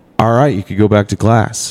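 normal talking voice

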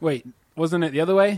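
ordinary delivery

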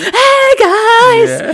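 very high, very loud, shrill put-on cheer. Imitate a woman on camera after a producer asks for energy, imitating an unnaturally energetic greeting. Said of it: "she unnaturally just will go".

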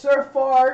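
loud, high bellowed call carrying across a hall.

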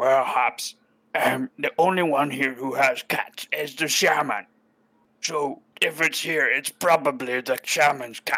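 slow, unhurried goblin character voice. Voicing another goblin explaining whose cat it is: goblin character voice. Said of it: "the other goblin looks at you and says".

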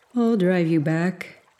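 said through a yawn. Narrator reading a man's offer to drive the narrator back, yawning. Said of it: "he said with a yawn".

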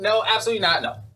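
high-pitched "no" said while laughing.

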